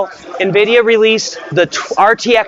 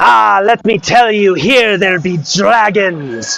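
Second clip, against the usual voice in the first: rough, unpolished put-on Scottish accent. Saying a line before moving on, in a put-on scottish accent. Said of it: "I don't know if that was a good Scottish accent or not".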